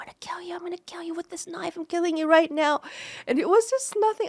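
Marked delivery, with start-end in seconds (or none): 0.0-2.8 raw, furious, full-volume screaming. Retelling how mom chased them with a knife: imitating mom screaming. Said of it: "she was screaming, like".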